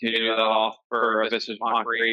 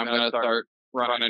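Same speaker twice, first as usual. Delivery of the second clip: ordinary delivery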